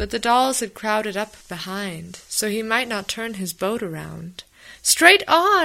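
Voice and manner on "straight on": piercing, very high, very loud cry of despair. Apple Blossom urges him on as the dolls crowd behind, crying out in despair. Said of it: "cried Apple Blossom in despair".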